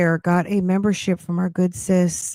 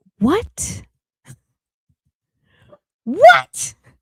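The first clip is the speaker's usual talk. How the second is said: very high, indignant disbelief, swooping "what"; 13 semitones higher than usual. Telling viewers how they reacted when the stream was cut off: retelling angry disbelief. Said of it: "I was so mad".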